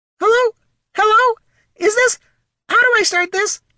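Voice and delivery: very high, chirpy, tweeting little sprite voice. A narrator reads a sprite fumbling to start a message, in a high, tweeting sprite voice. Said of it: "Said the sprite in its high, tweeting voice".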